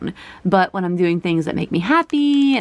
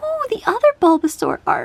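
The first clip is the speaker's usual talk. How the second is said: very high-pitched cooing squeak. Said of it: "that high-pitched squeak there".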